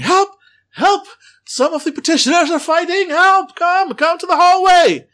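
very loud, high-pitched, shrill yelling cries. A young woman calls to the house assistants that petitioners are fighting, loud yelling for help. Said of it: "Normal human tone of voice, loud, of course, he's yelling".

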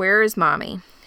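ordinary delivery

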